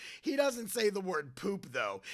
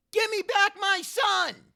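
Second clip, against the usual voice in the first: screamed, very high, shrill and very loud; 13 semitones higher, 10 dB louder than usual. Doing an impression of the listener yelling: screamed impression. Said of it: "here's my impression of you".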